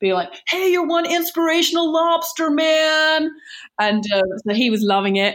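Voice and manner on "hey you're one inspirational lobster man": put-on American accent, shouted. Recalling shouting at a runner dressed as a lobster, American accent. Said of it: "in American accent".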